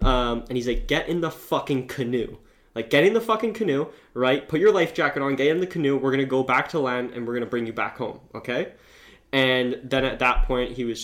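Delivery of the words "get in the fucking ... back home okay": play-acted stern, firm, insistent and pressing tone. Retelling a safety guide ordering a man into the canoe: retelling someone speaking loudly. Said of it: "telling him pretty loudly at him".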